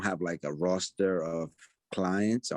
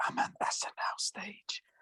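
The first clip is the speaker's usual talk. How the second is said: quiet whispered voice; 14 semitones higher, 6 dB quieter than usual. Recounting a phone call that finally came back, retelling a whisper. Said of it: "He's like whispered".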